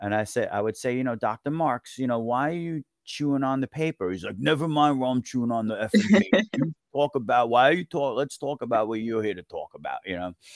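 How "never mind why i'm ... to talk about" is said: put-on raspy voice with thick Brooklyn accent. Act out Dr. Marks answering why he chews paper, in a raspy Robert De Niro voice, thick Brooklyn accent. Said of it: "he sounded like Robert De Niro with the thick Brooklyn accent".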